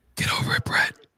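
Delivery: whispered under the breath. Retelling a joking remark made after meeting someone: imitating a whisper. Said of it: "I kinda whispered".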